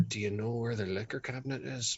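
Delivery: soft, hushed half-whispered aside. Asking another character in the room where the liquor cabinet is: half-whispering. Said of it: "just whisper".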